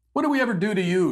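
high, whiny, fake tearful crying. Mocking opponents who play victim with fake tears: mock crying. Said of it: "you cry".

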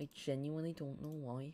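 put-on northern English accent.

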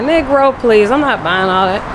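ordinary talk

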